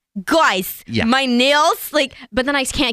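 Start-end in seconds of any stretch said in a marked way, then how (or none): 0.2-1.9 put-on New Jersey accent. Imitating a film character's way of talking: Margot Robbie New Jersey accent. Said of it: "Margot Robbie in Wolf of Wall Street, where she's like".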